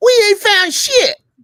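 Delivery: belted high, loud and slow.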